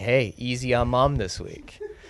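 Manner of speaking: plain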